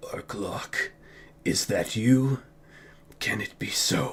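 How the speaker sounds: dark, deep, ominous voice full of dread. Narrating a story, a voice from a puddle of blood calls to Anvizal; deep, foreboding voice. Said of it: "forming a deep, foreboding voice".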